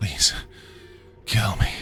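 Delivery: breathless wheeze. Reading a story where a wounded figure begs to be killed: wheezing. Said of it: "he wheezed".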